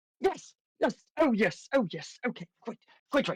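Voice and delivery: flustered, anxious, eager, high, very nervous voice. Voicing a character asking the front counter about an interview: very nervous person. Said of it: "you see a very nervous person".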